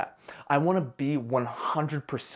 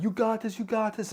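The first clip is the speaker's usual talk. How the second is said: mock very high-pitched excited cheering; 9 semitones higher than usual. Retelling the crowd's cheers during the curl: imitating people screaming. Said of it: "they're screaming".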